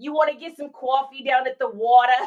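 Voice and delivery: casual, leaned-into Boston accent. Asked to do a Boston accent, giving it a try: Boston accent channeling Matt Damon. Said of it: "I gotta like channel my inner like Matt Damon in order to do it".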